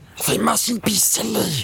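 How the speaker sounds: high, sibilant, hissing creature voice. Narrating Gollum backing away from Frodo after waking him, Gollum hissing. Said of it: "he hissed".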